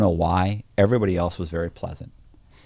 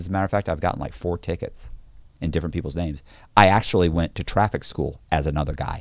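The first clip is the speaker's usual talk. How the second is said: ordinary talk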